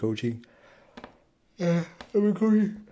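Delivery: talking through a yawn. Speaker updates listeners on their coaching course, yawning while talking. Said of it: "I'm sorry, I'm yawning".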